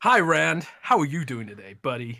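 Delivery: put-on American accent. Podcast co-host greeting the host Rand, in a fake American accent. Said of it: "your American accent stuff".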